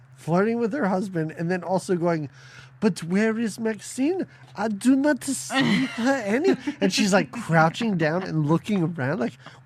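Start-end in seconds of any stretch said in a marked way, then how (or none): 2.8-6.6 high, slow, drawn-out put-on French accent. Retelling a film scene, imitating the actress: Angela Lansbury's French accent. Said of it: "imitations that you do, is Angela Lansbury's French".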